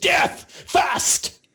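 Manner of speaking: very high, piercing, creepy shriek. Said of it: "that face comes back and he goes".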